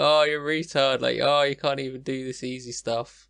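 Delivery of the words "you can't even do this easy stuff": normal talking voice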